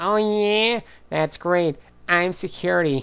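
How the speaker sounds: put-on nasal New York voice. Voicing a security guard, slipping into Fran Drescher voice. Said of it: "was she the nanny? Fran Dresser?".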